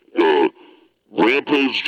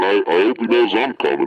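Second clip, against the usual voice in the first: ordinary talk, nothing marked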